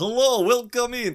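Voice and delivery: put-on silly Romanian-Transylvanian accent, very high, loud. Show the silly voice from the movie you are discussing, in a silly Transylvanian Dracula voice. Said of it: "like the Romanian Transylvanian".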